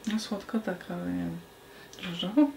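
low, mumbling mutter, half to oneself, under the breath. Commenting on a beer's smell during a tasting, muttering under breath. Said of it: "Znowu mówisz pod nosem".

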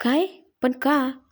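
in shock, stunned. A son reacts to his mother's news, shocked. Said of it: "त्याने धक्का लागावा तसं विचारलं".

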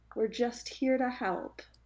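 high, sweetest, nicest friendly voice. Player speaking as Glencora in a role-play scene, in her nicest possible voice. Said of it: "speaks out in her nicest possible voice".

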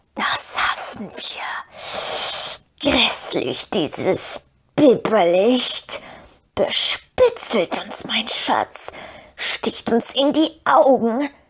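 hissing, whistling, creature-like whisper. Reading Gollum's lines as he squints at the moon, hissing, whistling Gollum voice. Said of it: "seine zischelnde und pfeifende Stimme".

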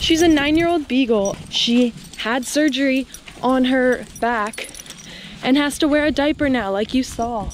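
breathless, panting, winded speech between gulps of air. After running up a hill, the speaker introduces their beagle, out of breath. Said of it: "I'm out of breath from running up that hill".

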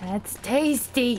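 put-on snake voice. Exploring a secret place and finding more items: snake voice. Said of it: "Snake voice".

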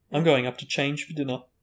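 usual speaking voice

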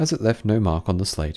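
ordinary delivery, nothing marked

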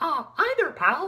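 very high, loud, squeaky cartoon voice. Opening a video of ten Disney impressions, in a Mickey Mouse voice. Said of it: "Mickey Mouse!".

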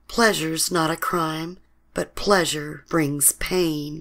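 plain

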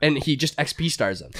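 ordinary delivery

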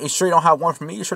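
tearful, blubbering, rushed crying voice. Acting out Esau pleading with his father Isaac, mock crying as Esau. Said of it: "he's just crying".

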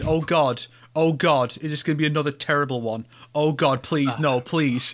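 ordinary talk

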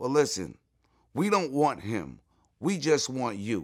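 ordinary talk

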